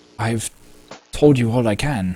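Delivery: yearning, grieving, sorrowful tone. Voicing a mother who wants her daughter back, longing and grieving. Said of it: "as like she's just really wanting her daughter back".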